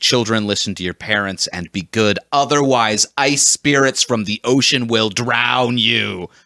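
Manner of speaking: ordinary delivery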